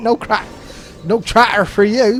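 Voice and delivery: put-on rustic farmer accent. Commenting on a battle in a game, slipping into a rustic farmer accent. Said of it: "apparently I go into a farmer accent every now and then".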